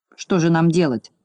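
ordinary delivery, nothing marked

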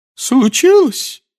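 shaky, trembling shout, very high and loud. A narrator reads a professor answering a student's question, in a trembling shout. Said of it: "дрожащим голосом выкрикнула та".

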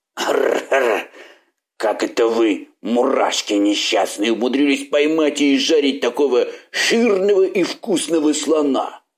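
rolling, beastly, growling monster voice. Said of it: "прорычал".

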